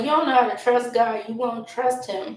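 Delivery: ordinary delivery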